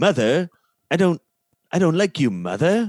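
very loud, high, belted cartoon-baby voice. Answering chat's request, the speaker performs for the others: Stewie impression. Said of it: "do a Stewie impression from Family Guy".

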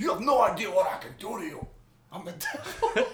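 full-throttle theatrical devil voice with big pitch swings. Quoting the devil from the movie: full-on Al Pacino impression. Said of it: "Pacino going full Pacino".

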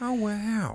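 soft, very high voice full of awe. Showing the common cheesy impression everybody does: Owen Wilson impression. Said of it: "What a little character".

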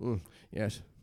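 minimal, understated, soft under-the-breath voice. Showing the others how easy a Tom Hardy impression would be: Tom Hardy impression. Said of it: "I could just go".

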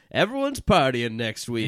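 ordinary delivery

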